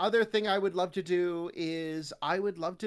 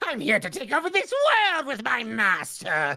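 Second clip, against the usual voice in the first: nutty, sing-song, high, swooping gremlin voice; 6 semitones higher, 7 dB louder than usual. Speaker explains they're built for side characters, then demos a nutty gremlin minion voice. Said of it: "I am meant to go like".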